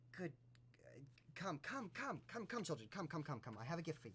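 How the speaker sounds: put-on coaxing, witchy old hag voice, calling out. Narrator voicing the hag who comes back to the group, in an old hag voice. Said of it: "the hag comes back, and she goes".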